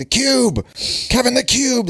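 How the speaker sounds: put-on, very high, excited yelling of a young child. Retelling how a kid playing Fortnite with them yelled, imitating Pack Freaky yelling. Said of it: "he's like yelling at us as we're playing".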